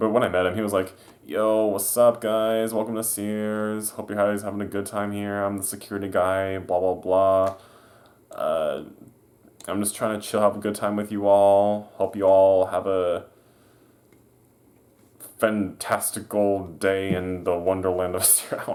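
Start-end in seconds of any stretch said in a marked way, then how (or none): 1.2-18.6 spaced-out, laid-back, slow, lazy stoner drawl. Speaker imitating the Sears security guy greeting them when they met, imitating a stoner security guy. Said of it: "the dude always talked like he was high".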